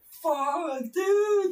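put-on, very high scream of sharp pain. Speaker recounting a painful foot injury, re-enacting their own scream. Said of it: "I actually screamed".

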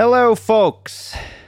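very high, loud, belted-out voice. Opening the episode with a greeting: Marc Maron impression. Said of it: "that's my Marc Maron impression".

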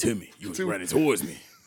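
eerie, unsettling, creepy put-on voice. Acting out a man's line in a joke about dreams: creepy voice. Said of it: "I don't know what this creepy voice is".

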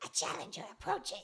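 loud, full-force hissing creature voice. Player voices a creature poking out from under a cloak, Yuri Turi hissing. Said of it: "pokes out from under Anton's cloak and hisses".

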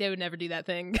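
ordinary talk, nothing marked

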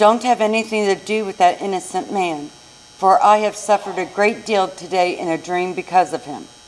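plain

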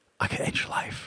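close, very quiet whisper, right into the ear. Recounting a gunman pressing a gun to their chest: retelling a whisper. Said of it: "he's whispering in my ear".

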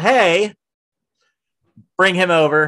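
loud, high yell shouted out.

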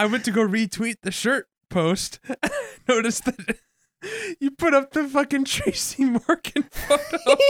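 talking through laughter. Apologizing to the other speaker mid-conversation, laughing while talking. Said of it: "Sorry, I'm laughing".

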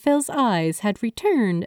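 ordinary delivery

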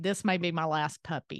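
ordinary talk

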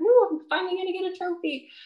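acted, very high-pitched, excited victory cheer. Retelling celebrating too early near a race finish: imitating own excited cheer. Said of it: "like, so excited".

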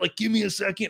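put-on frantic voice. Retelling being interrupted during a boss fight: imitating own freaking out. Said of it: "freaking out during a boss fight".

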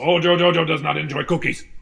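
high-pitched cartoon monkey villain voice. Offered a cookie, the speaker answers: Mojo Jojo voice. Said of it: "apparently I can do a good Mojo Jojo impression".

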